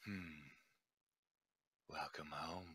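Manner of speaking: hushed, deep, raspy whisper. Voicing the patron speaking inside a player's head: deep raspy voice in the head. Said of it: "deep, uh, sort of raspy voice in the back of your head saying".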